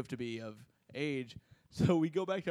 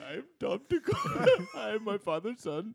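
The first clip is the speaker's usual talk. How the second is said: put-on Indian accent, much higher; 9 semitones higher, 3 dB louder than usual. A comedian on a show switches into his new bit: really offensive indian accent. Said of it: "I'm gonna do a really offensive Indian accent".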